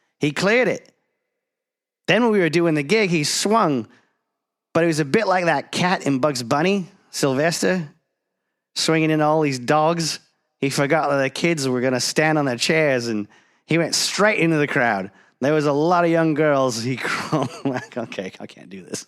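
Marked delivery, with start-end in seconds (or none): 0.2-16.8 fast, high, butchered, put-on Australian accent. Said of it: "I'm gonna butcher this accent".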